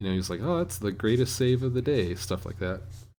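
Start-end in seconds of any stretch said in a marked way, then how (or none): 0.4-2.1 mock dripping sarcasm, insincere, swooping pitch. Retelling what he said about a missed call: imitating a sarcastic remark. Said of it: "was very sarcastic about it".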